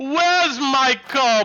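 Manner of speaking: big, resounding female voice. A game narrator voices a towering woman emerging from a crowd: booming female voice. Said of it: "a booming female voice".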